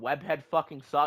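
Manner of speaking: usual speaking voice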